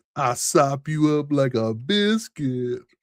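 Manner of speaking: cheesy, corny flirtatious delivery. Acting out a pickup line about gravy: mock cheesy pickup line. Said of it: "Terrible pick of lines".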